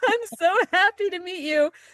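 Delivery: very high, choked-up, tearful voice, put-on. Retelling meeting Doctor Biden, imitating own words through choking tears. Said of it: "through choking tears".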